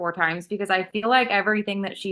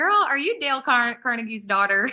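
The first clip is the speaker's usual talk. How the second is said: put-on, chatty Southern American accent; 3 semitones higher than usual. Reacting to a woman's talk, say it in a put-on southern accent. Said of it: "Like saying this in a Southern accent".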